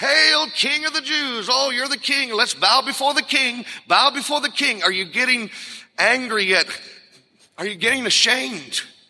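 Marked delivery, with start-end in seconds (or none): 0.0-4.8 high, scornful, jeering, mocking taunt. A preacher acts out the mockers hailing Jesus as king, acting out mocking words. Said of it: "And then mockingly".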